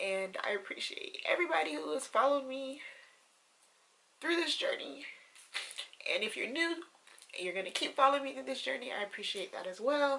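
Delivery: crying through the words. Speaker thanks everyone who has followed their journey, crying while speaking. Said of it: "I can't believe I'm crying".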